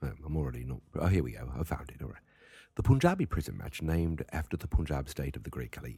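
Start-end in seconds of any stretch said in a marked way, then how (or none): 2.7-6.0 put-on British accent. Reading the rules of a match aloud from Wikipedia: British accent. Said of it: "I'm gonna read it with a British accent".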